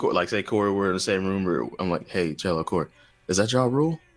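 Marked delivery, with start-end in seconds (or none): 2.1-4.0 put-on whispered delivery. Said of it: "And then I whisper to you".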